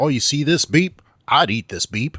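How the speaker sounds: very loud, high, put-on Southern US accent. Joking about a man casually chatting in a flooded street, Southern US accent. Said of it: "that's like getting southern all".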